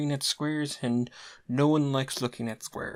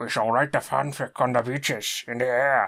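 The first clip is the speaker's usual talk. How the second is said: slightly slurred, mildly tipsy, put-on British accent; 3 semitones lower, 4 dB louder than usual. Narrating a fan fiction as mildly drunken Winston Churchill: drunken Winston Churchill voice. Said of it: "I have become mildly drunken Winston Churchill".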